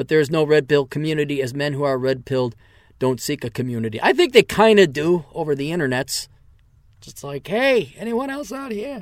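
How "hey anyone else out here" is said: high, put-on Yiddish-accented old man voice.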